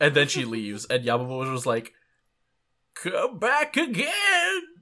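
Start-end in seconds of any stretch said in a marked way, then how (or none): 2.9-4.6 put-on very high, kind, little old grandpa voice. Retelling a post-credits scene, Yamamoto's kind old grandpa voice. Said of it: "little kind old grandpa voice telling her to come back again".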